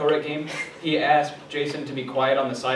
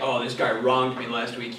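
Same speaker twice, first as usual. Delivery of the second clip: ordinary talk, nothing marked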